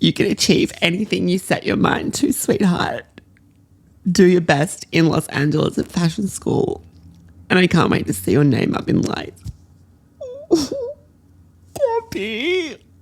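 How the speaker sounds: bawling, crying, high-pitched, swooping voice. Reading a note aloud while recording, bawling while reading. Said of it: "I'm like fucking bawling".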